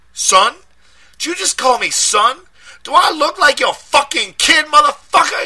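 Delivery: shrill, very high, very loud shouting. A man shouts back at the detective who just called him son: shouted back. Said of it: "he shouted back".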